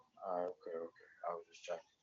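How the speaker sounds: soft, quiet, very low-volume speech. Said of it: "You were a little bit low".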